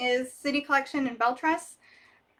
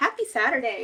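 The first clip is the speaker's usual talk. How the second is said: ordinary talk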